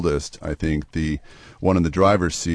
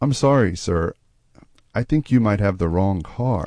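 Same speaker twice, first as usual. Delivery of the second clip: sweetest, gentle, most innocent polite voice; 3 semitones higher than usual. Retelling how a stranger in a car answered the speaker, in a sweet innocent voice. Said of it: "in the sweetest, most innocent voice".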